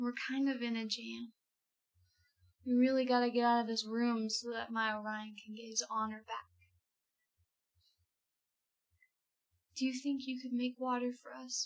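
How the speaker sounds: soft, hushed, secretive half-whisper. A player speaks to the little starfish they just befriended: half-whispering. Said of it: "whisper to it and say".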